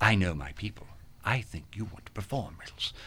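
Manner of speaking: put-on English-accented fair performer voice. Retelling a woman at a Renaissance Fair urging the speaker, imitating an English accent. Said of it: "starting already with this English accent".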